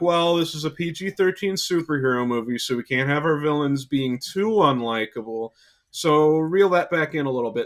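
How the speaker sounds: plain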